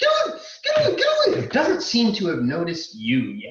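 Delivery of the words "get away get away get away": very high-pitched, shrill, panicked, terrified scream. Voicing a legless man bound in spider silk, screaming at a giant spider: screaming in terror. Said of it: "as he's screaming".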